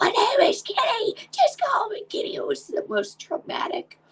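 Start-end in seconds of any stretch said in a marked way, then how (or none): 0.0-2.3 very high, pleading scream. Retelling what a daughter used to scream: imitating someone screaming. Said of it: "My daughter used to scream".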